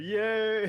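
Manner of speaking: sounding fake-enthusiastic, mock excited. Asked for more fake enthusiasm for a podcast intro: fake enthusiasm. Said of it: "you want more like fake enthusiasm?".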